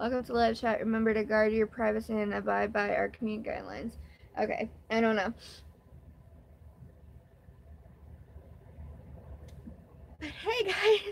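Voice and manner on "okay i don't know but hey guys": overcome, hushed near-whisper, close to tears. Streamer starting their first-ever live, greeting viewers, emotional. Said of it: "I'm so emotional".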